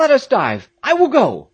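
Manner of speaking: sudden, convulsive, very high, loud, swooping outcry. Peterkin, starting up and grasping Jack by the arm, crying out. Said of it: "cried Peterkin, starting up and grasping Jack convulsively".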